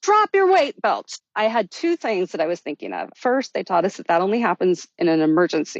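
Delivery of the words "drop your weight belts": put-on very high, urgent scream. Retelling how the dive master screamed at them as they floated away: retelling a scream. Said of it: "the dive master starts screaming at us".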